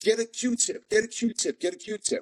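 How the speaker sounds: mock piercing, urgent scream, pitched very high. Retelling what he shouted to his cellmate, retelling a scream. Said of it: "I'm screaming to my to my celly".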